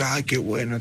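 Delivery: ordinary delivery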